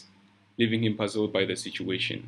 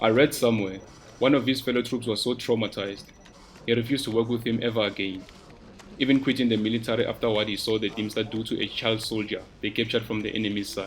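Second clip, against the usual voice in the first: plain reading voice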